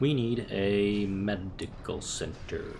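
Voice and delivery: drawn-out slow delivery. Planning what to build next, said very slowly. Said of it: "Don't know why I said that so slowly".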